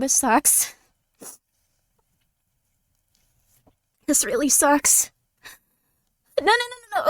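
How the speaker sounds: tearful, breaking down, crying through the words. Recalling being ignored again and breaking down, crying while talking. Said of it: "because I'm crying".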